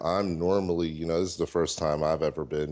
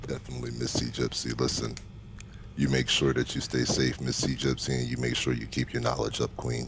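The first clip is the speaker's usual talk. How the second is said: deepest, sexiest, low, sultry voice; 5 semitones lower than usual. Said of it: "in your deepest, sexiest, most sultry voice".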